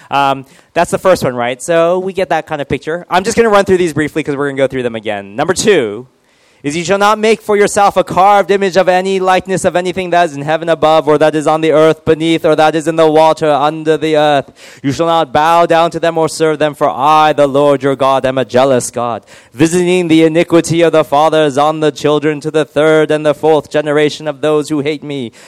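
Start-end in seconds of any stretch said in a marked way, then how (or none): 6.7-25.3 put-on loud reading in a British accent. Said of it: "not impressed with my British accent".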